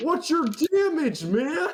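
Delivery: very high, shrieking, screaming orc voice. Telling the story, the speaker voices the orc from the kitchen: screaming orc voice. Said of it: "He screams".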